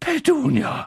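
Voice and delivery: panting gasp, pitched very high. A narrator reads the uncle gasping out the aunt's name: gasped out. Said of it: "stieß er keuchend hervor".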